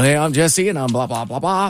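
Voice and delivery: put-on radio announcer voice. Recalling trying to impress a show producer, in radio announcer voice. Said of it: "I just flipped my radio mode on".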